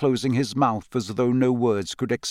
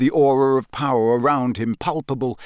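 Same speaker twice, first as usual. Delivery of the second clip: plain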